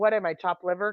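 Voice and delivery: ordinary talk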